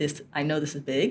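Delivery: plain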